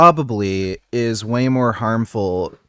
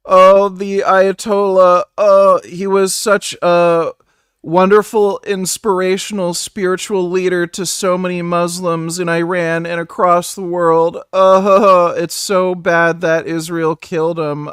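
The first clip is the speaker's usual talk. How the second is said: play-acted, high, whiny, heartbroken teenage-girl blubbering; 8 semitones higher, 4 dB louder than usual. Do an impression of a guy mourning iran's leader, imitating a guy crying like a teenage girl. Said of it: "do an impression of this guy crying like a teenage girl".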